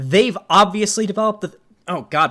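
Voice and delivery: voice breaking mid-phrase, cracking up high. Speaker addressing listeners, voice cracking mid-sentence. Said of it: "my voice just fucking cracked".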